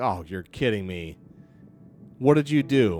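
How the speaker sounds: disgusted, revolted tone. Voicing a dwarf who comes forward to confront the orcs: disgusted. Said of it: "looks disgusted".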